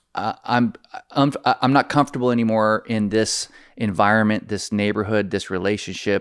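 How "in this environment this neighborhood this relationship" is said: ordinary talk, nothing marked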